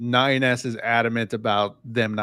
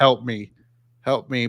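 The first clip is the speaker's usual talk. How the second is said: robotic, mechanical voice. Describing robots on a show pleading, quoting them in a robot voice. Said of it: "but in the robot voice".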